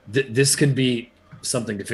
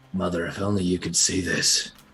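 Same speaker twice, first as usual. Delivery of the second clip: quiet whisper, lower pitch; 3 semitones lower than usual. A character stops just before Ogamar and speaks to himself in Elvish, whispering to himself. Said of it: "just kind of whispers to himself".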